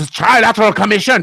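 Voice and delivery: very high, loud, put-on German accent. Speaker repeats an organization's name to make it sound worse, german accent. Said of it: "if it's a German accent".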